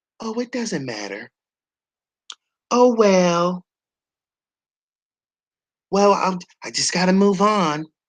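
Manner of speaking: put-on, fake nonchalant, dismissive monotone. Commenting on an interview where she played the victim, mocking Blac Chyna's nonchalance. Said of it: "acting like".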